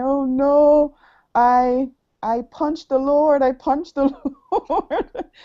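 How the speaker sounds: mock high, slow screaming and crying in distress. Telling Mike what you were saying when you woke up; imitating screaming and crying. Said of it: "I was screaming and crying and saying".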